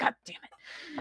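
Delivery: angry, pissed-off whisper. Voicing a pissed-off Franklin grabbing items from the table: pissed-off Franklin voice. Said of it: "pissed off Franklin grabs 'em".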